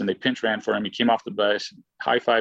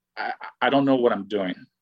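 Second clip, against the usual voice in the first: put-on nervous, panicked voice. Retelling walking back to the dugout after striking out: imitating own past nervousness. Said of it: "this nervous".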